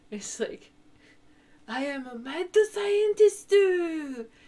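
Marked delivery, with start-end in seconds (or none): 1.6-4.2 high, loud, slow broken-English accent. Doing an impression after being asked for one: Steins;Gate Engrish voice. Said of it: "I can definitely do the Ingrish from".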